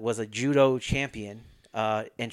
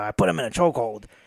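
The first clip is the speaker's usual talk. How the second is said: put-on rough old-school voice, louder; 4 dB louder than usual. Retelling a story about a judo trainer: rough Gene LeBell impression. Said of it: "he's like real rough. He talks like this".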